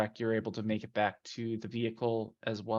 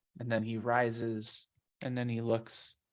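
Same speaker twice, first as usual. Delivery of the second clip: usual speaking voice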